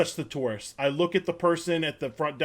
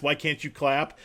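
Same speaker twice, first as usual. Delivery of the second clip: put-on deadpan delivery, quieter; 2 semitones lower, 5 dB quieter than usual. Imitating a performer's line to the crowd: imitating Noah Royak's deadpan. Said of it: "this deadpan sense of humor".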